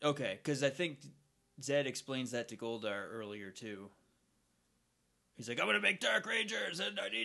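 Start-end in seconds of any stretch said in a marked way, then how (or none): 5.6-7.2 rough, rasping, pitched-up villain voice. Speaker retells a villain explaining his plan; Zed impression. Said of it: "I can't do Zed's voice".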